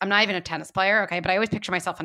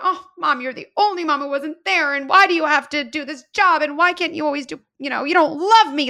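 put-on loud, high-pitched tearful sobbing child voice; 8 semitones higher, 7 dB louder than usual. Picturing a child on the other baseline, imitating a crying child. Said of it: "she's crying".

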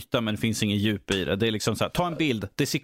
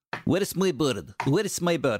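put-on Russian accent on English; 4 semitones higher than usual. Acting out the comic-book character's line, Mickey Rourke's Russian accent. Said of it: "Mickey Rourke gör en rysk accent".

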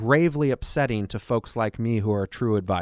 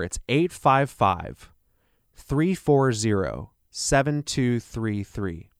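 said at a slightly slower pace. Repeating his phone number for listeners, say it a little slower. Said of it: "I'll say that a little slower".

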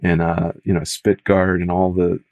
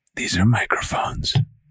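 mock, put-on ASMR voice; 2 semitones higher, 3 dB quieter than usual. Jokingly showing the microphones to the other speaker: put-on asmr voice. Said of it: "Should I go into my A S M R voice?".

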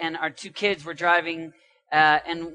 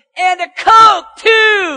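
put-on toddler scream, much higher, louder, slower; 14 semitones higher, 13 dB louder than usual. Parent retells their two-year-old son calling from the back seat, retelling Dawson's loud scream. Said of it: "screams it extremely loud".

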